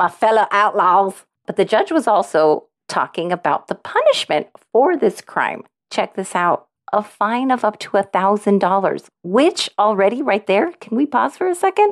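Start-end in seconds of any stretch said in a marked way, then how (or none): 0.0-1.1 put-on Texan accent. Speaker repeats their own phrase from a jury-duty story, in a Texas accent. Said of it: "in more like a Texas accent".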